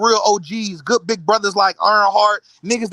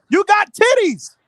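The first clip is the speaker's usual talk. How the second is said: shouting, higher; 12 semitones higher than usual. Taunting the other speaker about his body in an argument: yelling. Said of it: "Why are you yelling at me?".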